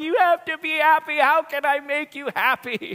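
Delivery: put-on sobbing, tearful child's wail. A father retells his daughter beating the floor, imitating her tearful wail. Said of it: "she's on the ground just beating the floor going".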